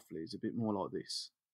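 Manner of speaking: very quiet, low, soft-spoken delivery. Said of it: "He speaks a little bit more softly".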